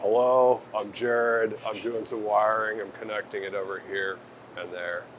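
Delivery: very soft, low, level droning monotone. Asked if he talked like this the whole time, showing it: very monotone. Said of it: "Very monotone?".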